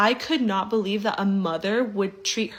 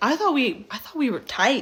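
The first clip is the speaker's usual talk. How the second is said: plain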